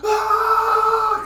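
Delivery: high, loud power-up scream, fully let rip.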